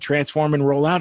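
ordinary delivery

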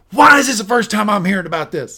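very loud, sudden, high-pitched blurt. Retelling how someone suddenly spoke up about a cursed room: retelling a blurted question. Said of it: "Ted just blurts".

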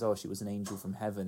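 normal talking voice

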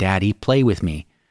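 mock cute small-child voice. Retelling his son asking him to play: imitating a cute three-year-old voice. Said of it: "in his cute little three-year-old voice".

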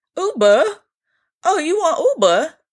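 extremely high-pitched, clumsy, bad British accent. Retelling what a man said back to them, imitating a very high-pitched voice. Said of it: "his voice was extremely high".

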